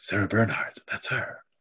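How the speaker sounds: hushed, gossipy whispered murmur. Voicing onlookers as a woman enters the car: whispering. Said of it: "you hear a few people whispering".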